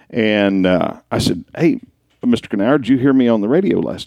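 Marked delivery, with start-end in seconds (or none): none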